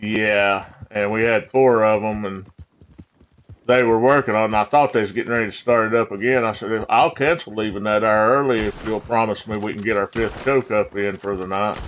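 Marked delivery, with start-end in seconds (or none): none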